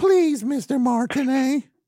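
put-on small, very high childlike little kid voice. Rehearsing a plea to Mr. Martinet, in a little kid voice. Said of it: "say it more like a little kid".

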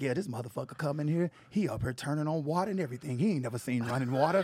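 very smooth, smooth-talking voice. Retelling what a friend's father said about a visitor: imitating Dana's dad's smooth voice. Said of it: "I'm gonna do Dana's daddy voice 'cause Dana daddy voice is very smooth".

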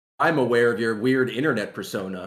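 plain

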